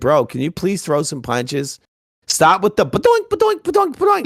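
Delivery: mock impatient nagging, swooping and animated. Retelling how Manny Pacquiao urged his opponent to throw punches: impatient Manny Pacquiao impression. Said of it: "He was very impatient. He's like".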